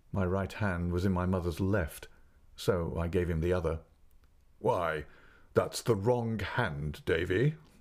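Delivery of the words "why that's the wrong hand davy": laughing in a deep voice, slower. Reading a story aloud, voice the gentleman speaking to the boy: laughing, deep voice. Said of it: "said the gentleman, / but somehow I didn't like him or his deep voice".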